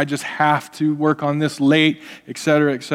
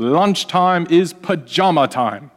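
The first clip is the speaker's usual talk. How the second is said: put-on South African accent; 3 semitones higher than usual. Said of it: "he had a South African accent".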